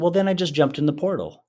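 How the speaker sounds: mock matter-of-fact delivery. Retelling what a daughter told her dad: imitating a matter-of-fact tone. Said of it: "she said it so matter-of-factly".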